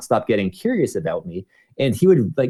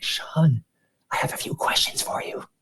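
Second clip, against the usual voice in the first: gentle breathy whisper; 6 semitones higher, 6 dB quieter than usual. Retelling how a coworker came up before work: imitating a whisper. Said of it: "whispering to me".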